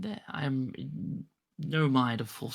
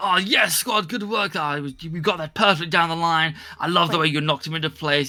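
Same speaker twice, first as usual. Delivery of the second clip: loud, swaggering, self-congratulating bravado; 3 semitones higher, 12 dB louder than usual. Voicing squad members praising each other overheard: boastful bravado. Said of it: "bravado about".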